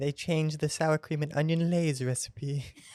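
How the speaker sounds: put-on, performed British accent. Asked for a sentence, the self-styled king of accents demonstrates a put-on accent. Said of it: "I am the king of accents".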